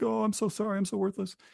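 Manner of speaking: high, mopey, sad-sack, self-pitying, depressed whine. Retelling a scene, voicing the sliding guy: imitating depressed whining. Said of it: "doing his depressed shtick".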